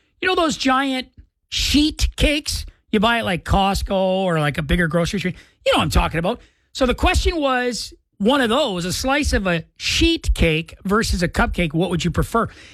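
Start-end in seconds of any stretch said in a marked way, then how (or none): 0.2-2.7 deliberate, slow, careful enunciation. On the radio, saying a word that could sound like a swear, nice and slow. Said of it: "I have to say it nice and slow".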